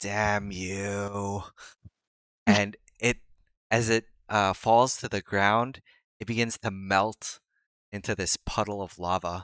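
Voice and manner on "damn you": eerie, creepy mutter, "you" stretched out. Game narrator voicing a creature that stares at the player: creepy muttering voice. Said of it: "mutter out this very creepy voice".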